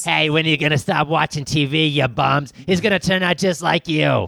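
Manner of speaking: messed-up put-on drunk woman voice. Acting out the drunk mother from the movie: messed-up drunk mom voice. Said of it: "Real messed up voice".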